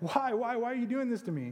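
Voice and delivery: high-pitched, desperate, pleading cry. Retelling how a beaten pilgrim cries out to his attacker: acting out a crying out. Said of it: "he cries out".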